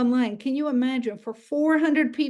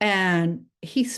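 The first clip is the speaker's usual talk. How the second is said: ordinary talk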